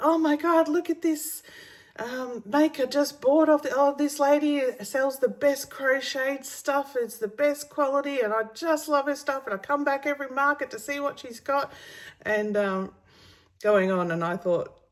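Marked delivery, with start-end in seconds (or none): 0.0-11.7 put-on, high, all-excited gushing. Retelling a customer praising the stall to a friend: imitating someone excited. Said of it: "was showing her all excited".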